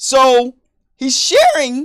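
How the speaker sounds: voice cracking. Describing how a man tells his cheating story: voice cracking. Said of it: "Whoa, my voice cracked".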